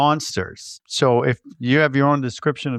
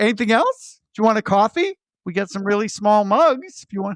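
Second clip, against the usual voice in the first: put-on breezy, clueless, happy-go-lucky, cheerful, high chatter; 7 semitones higher than usual. Retelling a scene where an oblivious crewman offers help: imitating a cheerful crewman. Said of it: "he is the happiest guy on the ship".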